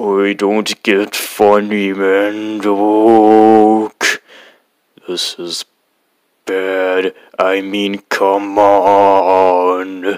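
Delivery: deep, booming voice, very slow, end drawn out. Reading a story where Nostalgia Critic insults the narrator: Nostalgia Critic in deep booming voice. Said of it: "in a very deep, booming, hyper-realistic voice".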